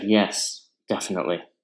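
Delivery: put-on irritated, agitated, sardonic, sarcastic. Retelling a ski instructor's reply: imitating an agitated, sarcastic tone. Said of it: "in an agitated, sarcastic tone".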